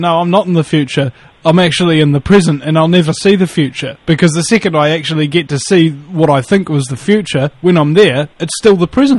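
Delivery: ordinary delivery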